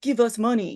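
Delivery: broken, unconvincing tough-guy English. Retelling a trio of would-be bad guys demanding money: imitating bad tough guy English. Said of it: "trying to do tough guy English".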